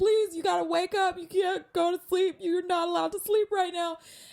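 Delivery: put-on tearful crying plea, very high and loud. Retelling begging an injured woman to stay awake: imitating own crying plea. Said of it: "and I'm crying".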